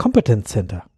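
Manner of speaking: Kompetenzcenter, German pronunciation with English stress pattern. Imitating how colleagues say a common word: Kompetenzcenter with English-style stress. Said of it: "sie sprechen es deutsch aus, komplett deutsch, betonen es aber englisch".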